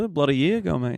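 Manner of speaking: put-on, Aussie-sounding Australian accent. Showing how "a year ago" sounds: put-on australian accent. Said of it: "a year ago sounds like an Australian thing".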